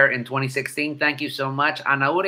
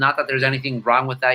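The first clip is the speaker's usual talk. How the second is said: usual speaking voice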